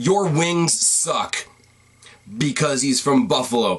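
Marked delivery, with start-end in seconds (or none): 0.0-1.4 put-on, mocking, jeering shout. Retelling a fan heckling a wrestler from the bleachers: imitating a fan shouting. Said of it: "one of the fans shouts".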